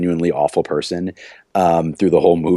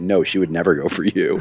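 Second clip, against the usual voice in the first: mock-deadpan, flat delivery. Retelling how he gives Randy a hard time in a movie scene, retelling a deadpan line. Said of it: "like deadpan completely".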